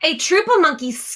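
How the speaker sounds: plain reading voice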